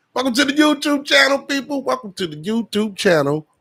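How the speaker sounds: loud, excited announcer style.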